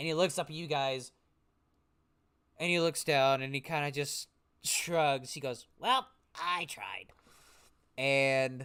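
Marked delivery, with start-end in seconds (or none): 5.8-7.1 put-on elderly halfling character voice. Voicing the halfling shrugging after being caught: old halfling voice. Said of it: "this old halfling man".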